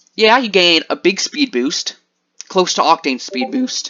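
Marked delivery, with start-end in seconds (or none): 3.2-3.9 voice cracking up very high. Explaining a game character's ultimate ability, voice cracking. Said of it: "Sorry, voice crack".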